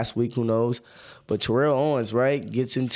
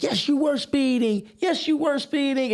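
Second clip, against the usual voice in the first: high, tearful, sobbing delivery. Retelling how a woman answered him: imitating someone crying.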